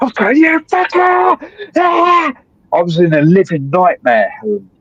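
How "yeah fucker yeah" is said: play-acted, frenzied, very high, wild scream. Retelling screaming at people at the hospital during psychosis: imitating own screaming. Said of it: "I was screaming at people".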